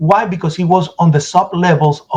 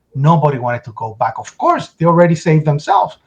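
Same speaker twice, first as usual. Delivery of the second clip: ordinary talk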